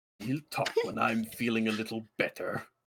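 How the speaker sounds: sore, grumpy, disappointed grumble. A disappointed voice in someone's head answers them, grumpy. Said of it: "He's fucking grumpy".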